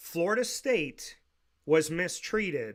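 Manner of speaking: slow, drawn-out, word by word delivery. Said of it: "I will say it slow".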